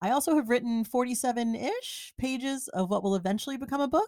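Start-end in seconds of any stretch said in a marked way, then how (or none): 2.9-4.1 rising uptalk pitch on book. Listing this year's achievements, pages of a future book; questioning rise on book. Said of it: "she says with a question in her voice".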